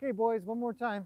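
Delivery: loud calling out.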